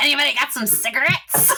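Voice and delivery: put-on high little goblin character voice. Joking about meeting a goblin character, doing its voice: goblin voice. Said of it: "And their voice is like".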